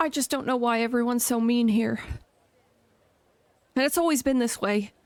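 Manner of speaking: crying, tearful voice. Answering someone who asks if she is all right: crying. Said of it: "don't cry".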